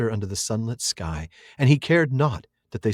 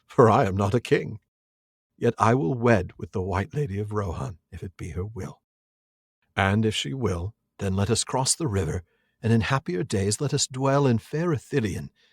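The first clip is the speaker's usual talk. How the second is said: plain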